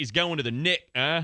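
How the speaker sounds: clearly faked English accent. Trading slang for prison, one speaker tries it out: put-on English accent. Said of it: "if I try to put on my English accent".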